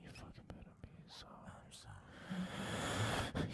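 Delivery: soft, unvoiced, mock-threatening whisper.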